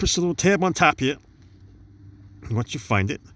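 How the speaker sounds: out of breath. Pushing a small tab on top of a switch, out of breath. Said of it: "Running out of breath here".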